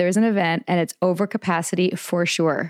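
plain

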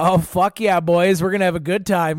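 put-on hearty Canadian accent, bro style. Retelling how the rafting guide greeted the group: canadian accent. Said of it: "we hear this Canadian accent".

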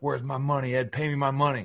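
needling, taunting trash-talk tone. Retelling an NBA on-court exchange, imitating a veteran player yelling at another player. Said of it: "he's yelling like".

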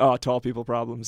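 ordinary delivery

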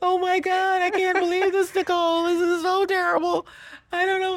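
very high, sobbing, tearful distress. Retelling a phone call made the day after the murder: retelling crying. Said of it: "and I called you crying".

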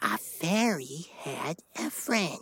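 hushed, soft half-whisper. Repeating a rhyme line after the leader before nap time: half-whisper. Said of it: "repeat after me in a whisper".

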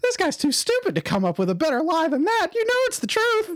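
very high cartoon voice, swooping around. Voicing an insulting puppet to a player character: Mickey Mouse voice cussing. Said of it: "like being cussed out by Mickey Mouse".

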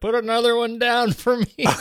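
put-on shouting. Acting out the listener yelling to his daughter, mock yelling. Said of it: "you are yelling to your daughter".

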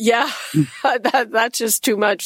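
talking through laughter. Reacting to a Valentine's getaway offer, laughing while talking. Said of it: "Sorry if I'm, I'm laughing".

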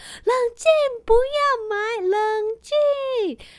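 shrill, very high, loud shouting. Retelling how a companion yelled in a shop, imitating someone shouting. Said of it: "非常大声的喊".

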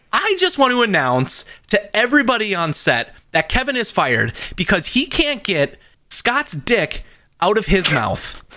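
high film-star announcer voice. Reenacting a scene as Tom Cruise warning the crew: acting as Tom Cruise. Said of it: "reenact this as if I was Tom Cruise".

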